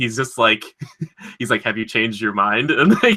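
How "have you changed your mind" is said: mock, flat, deadpan delivery. Retelling a phone call from a story, imitating the caller's deadpan delivery. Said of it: "the just deadpan".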